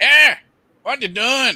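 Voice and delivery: loud, very high fake American hillbilly accent. Running through fake accents, a line in a fake American hillbilly accent. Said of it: "And then you have the the American hillbilly".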